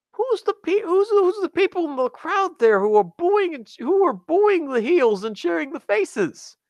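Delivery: high, puzzled bystander voice.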